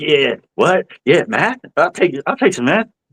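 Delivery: very high, jumpy, twitchy tweaker voice. Retelling how some of them react to a math question, imitating a tweaky guy. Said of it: "they get all like fucking tweaky".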